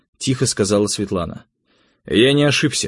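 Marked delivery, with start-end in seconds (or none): 2.1-2.9 obstinate, stubborn, insistent tone. The narrator answers a woman who says he made a mistake: stubbornly. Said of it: "упрямо сказал я".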